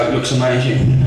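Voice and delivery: normal talking voice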